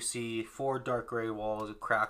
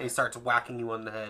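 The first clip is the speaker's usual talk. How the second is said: normal talking voice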